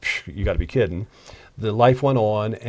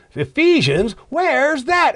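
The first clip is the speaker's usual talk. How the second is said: loud yell, higher and louder; 4 dB louder than usual. Retelling how the guy behind in church called out: imitating someone yelling loudly. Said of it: "yells out in a loud voice".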